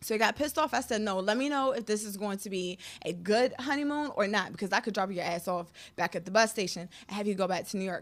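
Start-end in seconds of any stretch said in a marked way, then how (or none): none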